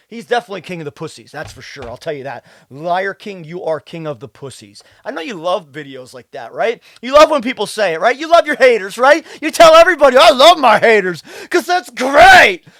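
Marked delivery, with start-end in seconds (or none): 10.1-12.5 stress landing on the wrong, odd word. Mocking how a fitness influencer talks: imitating Liver King's odd word emphasis. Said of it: "he puts emphasis on the wrong word".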